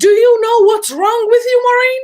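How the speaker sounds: very high, loud, angry, full-lung yell. Recounting a man turning red before all the students, the speaker does imitating a man yelling. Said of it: "he yelled at the top of his lungs".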